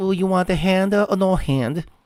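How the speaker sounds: put-on Chinese accent. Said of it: "and it gives you the accent".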